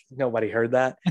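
normal talking voice

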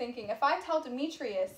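ordinary delivery, nothing marked

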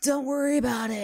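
put-on slurred speech. Retelling how a man answered after the speaker damaged his car, imitating slurred words. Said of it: "he's like slurring his words".

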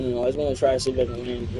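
usual speaking voice

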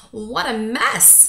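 said with a gasp. Pete, aboard an empty old floating ship, looks over the cluttered deck; gasped. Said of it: "gasped Pete".

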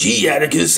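attempted smart-sounding, bright, excited dog voice. Trying to imitate the narrator's voice for Oberon the dog: attempted Oberon dog voice. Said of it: "I can't even do the voice".

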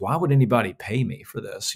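normal talking voice

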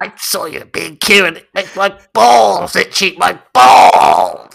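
loud, strained sailor voice, pushed out. Voicing a character in a comedy bit: constipated Popeye voice. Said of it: "He sounds like a constipated Popeye".

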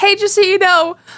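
high-pitched voice, called out as if over a fence. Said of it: "And I yelled over the fence".

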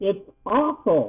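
barely-there, faint, high-pitched little squeak. Reading a story, a character staring at an enormous owl can hardly speak: barely squeaked. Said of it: "she barely squeaked".

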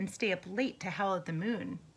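ordinary delivery, nothing marked

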